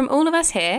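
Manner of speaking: put-on British accent. Saying goodbye to listeners at the episode's end: put-on british accent. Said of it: "That was British".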